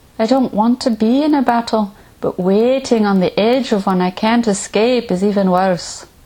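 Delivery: put-on rough, poor Scottish accent. Quoting the hobbit Pippin on the city ramparts as armies approach, bad Scottish accent as Pippin. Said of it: "Forgive my terrible Scottish accent".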